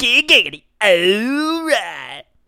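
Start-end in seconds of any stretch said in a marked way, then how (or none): 0.0-0.6 very high, loud put-on cartoon voice. Showing off another impression, saying giggity in a Quagmire voice. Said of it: "I also can do Quagmire".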